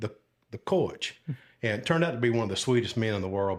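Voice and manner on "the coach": put-on good old down-home Southern accent. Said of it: "just good old Southern accent".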